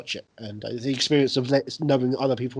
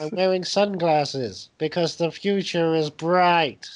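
weather-report announcer voice; 4 semitones higher than usual. Imitating a weather report, speaking like David Lynch. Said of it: "Remember that thing he did, the weather report".

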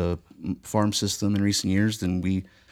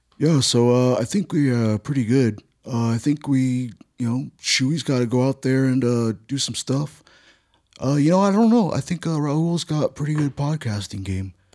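rambling, halting put-on voice, pitched up, full of fillers; 5 semitones higher than usual. Doing an impression while talking about the Angels: Mike Scioscia impression. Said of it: "I just decided I'm gonna do it right now".

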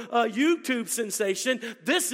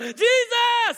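put-on desperate cry, very high, loud, drawn-out; 11 semitones higher, 6 dB louder than usual. Speaker retells a man shouting for Jesus while bumping into things: retelling a loud yell. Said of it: "he's yelling".

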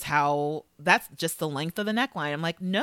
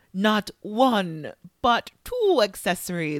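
slow, drawn-out vampire voice; 3 semitones higher, 3 dB louder than usual. Retelling Michelle teasing him as his model walks the runway, Count Dracula voice. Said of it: "teases him with a Count Dracula voice".

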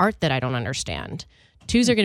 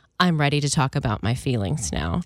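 plain, low-key, understated delivery; 2 semitones lower than usual. Retelling what Hunter said to my sister, imitating a quiet line. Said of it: "says very quietly".

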